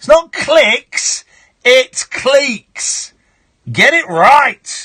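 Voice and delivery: mock furious, fussy yell, high, loud and slow. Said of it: "Makes me so angry".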